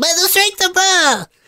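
very high squeaky chipmunk voice. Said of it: "little tiny voice like Alvin and the Chipmunk".

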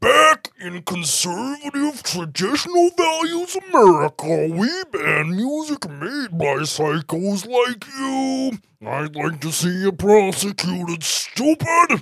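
put-on odd, bug-like character voice. A Conservative America representative goes after a musician, in a put-on conservative character voice. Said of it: "So this is [name] and a representative from the other side, Conservative America, trying to go after [name]. ... Jesus Christ, your voice, [name]. What's wrong with I need sugar water? Yeah, that's sugar water. That's what I was thinking the entire time. I was like, are you doing this bad [name] fro".

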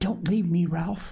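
whispered urgently. A voice calls from behind ralph as he steps forward, whispered urgently. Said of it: "A voice whispered urgently behind him".

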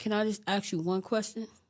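ordinary talk

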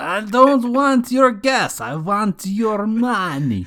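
fake, bad Russian accent, pitched very high. Cued to do a bit, speaking in a put-on Russian accent. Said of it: "Cue [name]'s Russian accent".

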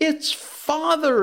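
exclaimed in a very high voice. Wendy, seeing a man inside the kennel, exclaims. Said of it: "exclaimed Wendy".

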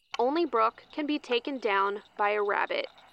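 ordinary delivery

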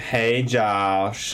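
put-on Deep South accent, Southern drawl. Picturing a girlfriend who talks with a deep South accent. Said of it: "She just talks like".

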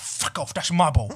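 put-on dog voice with a Cockney accent. Describing her dog's ball game, voicing what the dog says; Cockney accent. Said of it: "she has a Cockney accent".

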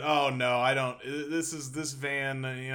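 put-on flustered, fumbling stammer. Retelling trying to explain the van to a man: imitating fumbling over words. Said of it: "I'm fumbling over my words".

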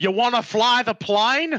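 put-on offhand, casual delivery in an Australian accent. Imagining filmmakers calling Michael Caine in to improvise, doing Michael Caine with Australian accent. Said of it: "I don't know why I'm making him Australian".

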